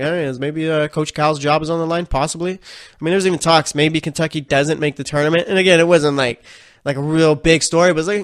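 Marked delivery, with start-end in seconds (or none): none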